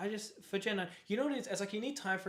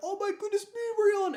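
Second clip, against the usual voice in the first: high, loud excited yell. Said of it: "they go like".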